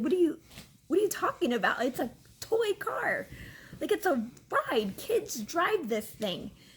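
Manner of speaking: play-acted incredulous, half-laughing, swooping high. Retelling being refused a toy car ride: retelling own words almost laughing. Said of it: "almost laughing".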